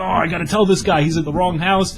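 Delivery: acted panicked flustering. Recalling an app sending someone to the wrong house, retelling own panic. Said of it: "So now I'm panicking".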